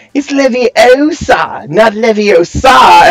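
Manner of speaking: mock high, very slow, jeering taunting tone. Retelling how Ron makes fun of her later: Ron mocking Hermione. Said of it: "making fun of her".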